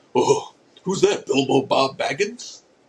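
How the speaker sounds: casual, relaxed, offhand voice. Retelling what a Lord of the Rings fan says watching a movie, impression of a movie-watching guy. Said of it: "This is my impersonation of a guy".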